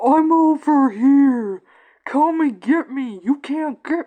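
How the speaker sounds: loud, put-on taunting holler, stretched out. Mocking what characters do in a zombie apocalypse show: imitating someone yelling.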